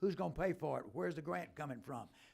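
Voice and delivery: plain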